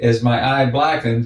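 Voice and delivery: ordinary delivery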